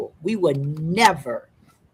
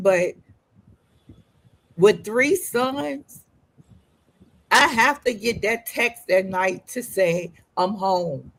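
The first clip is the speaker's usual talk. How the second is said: tearful, weeping through the words while talking; 3 semitones higher than usual. Speaker with three sons, apologizing for crying, explains the nightly text, crying while speaking. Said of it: "I'm sorry, I'm crying".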